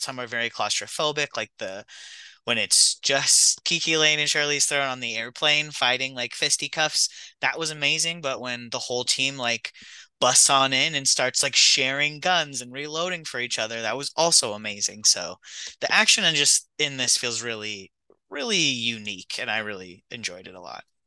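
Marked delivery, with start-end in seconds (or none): 6.3-7.1 heavy stress on fisty in fisticuffs. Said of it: "Really put a lot of emphasis on that fisty".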